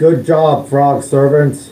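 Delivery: loud yell in a put-on character voice. Yelling to another character during a fight: yelling in character. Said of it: "I yell at Riley".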